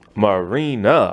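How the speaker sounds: slowed down and drawn out.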